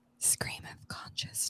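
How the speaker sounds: hushed, soft ASMR whispered delivery. Saying a podcast name when asked to: asmr voice. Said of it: "Can you say it in the A S M R voice?".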